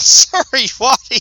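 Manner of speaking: high-pitched, loud, laughing delivery. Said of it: "I'm sorry to be laughing about that".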